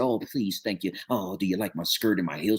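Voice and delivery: put-on meek, docile voice. Speaker acts out the person others want them to be: mock-docile voice. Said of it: "you just was docile and you said".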